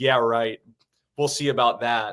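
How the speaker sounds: ordinary talk, nothing marked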